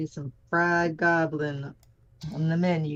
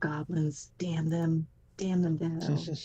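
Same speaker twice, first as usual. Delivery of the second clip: muttered quietly under the breath. Player's character curses the goblins, muttering under breath. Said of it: "I'm just muttering under my breath".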